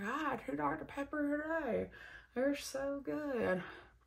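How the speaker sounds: put-on old lady voice with country accent.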